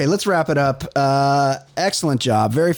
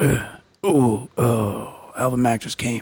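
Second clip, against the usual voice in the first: low-key, quiet, subdued little climax sounds; 3 semitones lower than usual. Picturing a named man climaxing quietly: imitating a quiet climax. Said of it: "he is not a loud comer".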